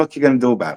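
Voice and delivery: put-on, fake Italian accent. Speaker answers another's Buccaneers pick: Italian accent. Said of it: "Don't talk to me in that Italian accent".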